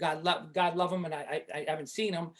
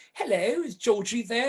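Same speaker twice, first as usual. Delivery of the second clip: slight put-on English accent; 5 semitones higher than usual. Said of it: "keep this little accent going".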